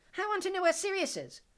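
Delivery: very high, loud, scornful mock echo of words. Reading a villain mimicking the boy's words: mimicking mockingly. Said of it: "mimicked the woman to his left".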